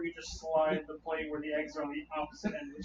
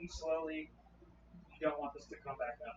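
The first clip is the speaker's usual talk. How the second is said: hushed whisper under the breath, very quiet; 10 dB quieter than usual. Feeding a creature in character, telling it to eat slowly: whispering. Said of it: "I'm just gonna whisper".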